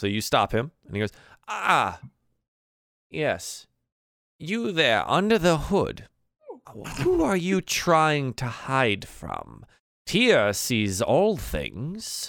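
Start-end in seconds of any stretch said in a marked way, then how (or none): 1.5-12.3 slow, unhurried, high-pitched sermonising preacher voice. Voicing a game character whom the players stop, speaking more slowly. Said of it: "but speaking more slowly".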